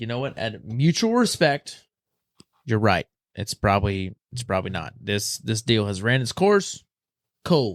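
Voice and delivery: ordinary talk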